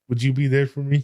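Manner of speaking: put-on sad, pleading tone. Retelling a scene where he asks her a question, in a mock-sad tone. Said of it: "asks her like in that sad tone".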